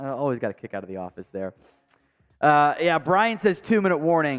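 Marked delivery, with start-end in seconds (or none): none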